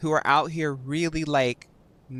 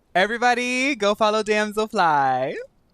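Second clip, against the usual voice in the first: smug, self-satisfied tone. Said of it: "That sounded so smug".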